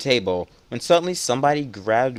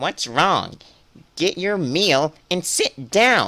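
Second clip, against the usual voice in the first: put-on Valley Girl voice, high; 5 semitones higher than usual. Voicing a game character's lines, giving her a valley girl voice. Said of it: "Valley Girl voice".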